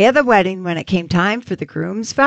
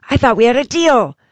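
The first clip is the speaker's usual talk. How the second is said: hissed aside; 4 semitones higher than usual. Telling a wedding joke, the groom leans toward the pastor: hissed. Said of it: "leaned toward the pastor and hissed".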